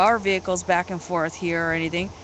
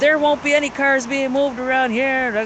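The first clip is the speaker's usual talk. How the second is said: mock yelling, much higher; 6 semitones higher, 4 dB louder than usual. Telling about a man yelling at a woman who moved her car, retelling a man's yelling. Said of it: "he's yelling".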